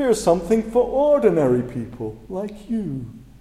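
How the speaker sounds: talking-down, patronizing tone. Retelling how an arrogant canadian actor addressed people, mock condescending voice. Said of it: "adopt this very arrogant approach".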